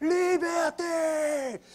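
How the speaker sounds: very slow, high, shouted battle cry. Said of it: "il crie".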